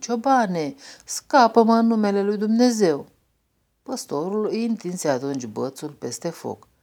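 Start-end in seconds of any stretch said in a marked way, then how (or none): 0.0-3.1 crying out, begging, high and loud pleading. A snake caught in a burning forest calls to a shepherd: crying out pleadingly. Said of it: "îi strigă rugându-l".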